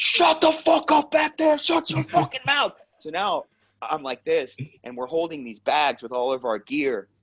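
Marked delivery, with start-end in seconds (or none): 0.0-2.7 mock very high shrieking scream. Retelling a bus ride where a Marine trainer yelled: imitating someone screaming. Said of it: "screams from the front seat".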